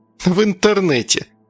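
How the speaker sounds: snide, sneering, sarcastic little jab. Narrator reads Agata retorting to Gleb: snide. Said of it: "ехидно заметила Агата".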